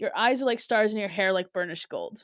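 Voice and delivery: ordinary talk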